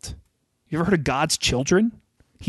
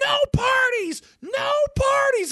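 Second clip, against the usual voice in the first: very high, drawn-out screaming. Retelling a party, the speaker quotes the landlord in the middle of the line: imitating someone screaming. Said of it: "she's screaming".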